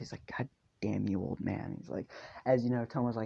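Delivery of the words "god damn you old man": mock muttering under breath, lower pitch. Retelling a story character cursing at his trainer: imitating cursing under breath. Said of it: "he curses under his breath".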